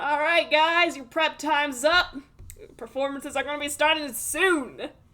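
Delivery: loud bellowing shout, as through a megaphone. A Broadway-director figure calls out to the guys, shouting into a megaphone. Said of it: "he's like shouting into the into the megaphone".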